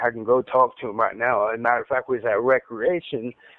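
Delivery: plain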